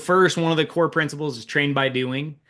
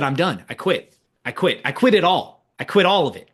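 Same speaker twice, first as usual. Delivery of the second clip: put-on tearful weeping, despairing and broken down; 2 semitones higher than usual. Recalling calling someone from the car, acting out past weeping. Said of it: "had to call someone and just wept and said".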